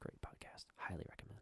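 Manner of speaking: whispered speech. Recommending a podcast to the other speaker: whispering into the microphone. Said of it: "you're whispering into the microphone".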